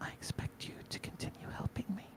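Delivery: soft, hushed, slight half-whisper. Voicing a character speaking to a much taller companion: slight whisper. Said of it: "she whispers slightly".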